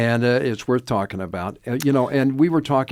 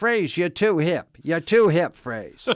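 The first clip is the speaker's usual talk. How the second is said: put-on pitched-up Boston accent; 6 semitones higher than usual. Retelling what a boston cab driver kept saying to him, boston accent impression. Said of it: "in his Boston accent".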